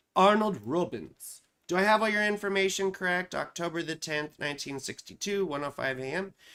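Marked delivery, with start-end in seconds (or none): 0.2-1.4 put-on British accent. Saying the listener's name aloud on a whim, in a british accent. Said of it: "I feel like saying your name with a British accent".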